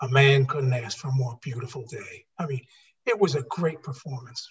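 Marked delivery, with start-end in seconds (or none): 0.0-2.3 deep, low, solemn voice. Quoting a condemned man's last line from an episode, in a deep booming voice. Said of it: "that deep booming voice".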